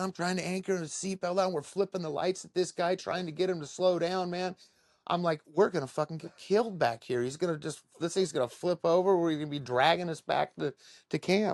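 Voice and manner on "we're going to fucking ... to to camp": frantic screaming and yelling. Retelling a wild ride, yelling at the driver: imitating own past yelling. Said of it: "we're screaming and yelling".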